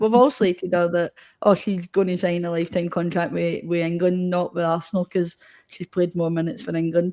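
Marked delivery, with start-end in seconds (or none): none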